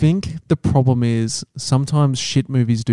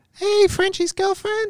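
way-up, very high-pitched put-on voice; 3 dB quieter than usual. Impersonating each other's girlfriends in conversation, greet the other one, imitating a girlfriend's high-pitched voice. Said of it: "My girlfriend's got quite a high-pitched voice".

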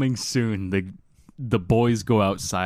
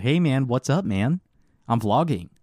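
casual put-on American accent; 4 semitones higher than usual. Speaker acting out filming people in the neighborhoods while vlogging, in an American accent. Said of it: "I'll speak like with an American accent".

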